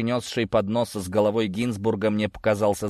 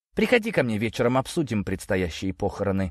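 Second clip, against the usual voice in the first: plain reading voice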